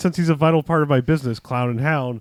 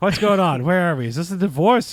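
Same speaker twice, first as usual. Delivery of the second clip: put-on pitched-up, befuddled, confused senile old judge voice; 5 semitones higher than usual. Retelling a movie scene, imitating a senile old judge. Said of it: "doing the, like, senile old judge thing".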